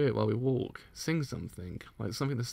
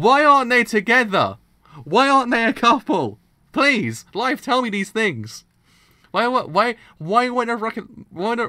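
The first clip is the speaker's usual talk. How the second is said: flustered, tongue-tied, higher and louder; 11 semitones higher, 14 dB louder than usual. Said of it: "I can't even speak".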